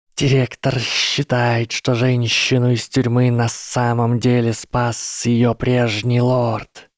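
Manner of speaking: hissing, serpent-like snake voice. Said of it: "Гарри прошипел в ответ".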